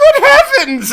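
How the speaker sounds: shrill, very high, very loud shocked cry. Voicing a startled mother as someone appears on her breakfast table: startled exclamation in character. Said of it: "and you just hear".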